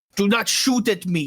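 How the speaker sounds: high, creature-like voice calling out. Voicing a creature turning back at the woods: yelling creature voice. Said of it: "he turns back to you and yells".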